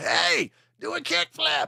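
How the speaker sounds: put-on very high, rough hollering voice. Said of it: "he's yelling at them".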